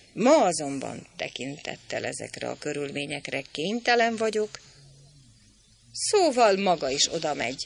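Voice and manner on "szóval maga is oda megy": scornful, contemptuous, disdainful tone. A narrator reads the innkeeper woman's remark to the pharmacist, contemptuous. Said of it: "mondta a fogadósné megvetőleg".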